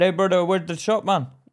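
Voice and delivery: mock Indian accent, twangy. Showing a friend how someone would ask for the shop, Indian accent. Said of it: "That's how they'd say it if they was an Indian twang".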